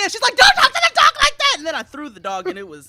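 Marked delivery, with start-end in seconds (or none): 0.4-1.5 very loud, very high, shrill, outraged angry yell. Recounting what a woman shouted in the middle of a story, mimicking her angry yelling. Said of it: "I'm yelling at the dog".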